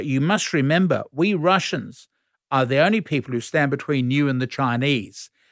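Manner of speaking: plain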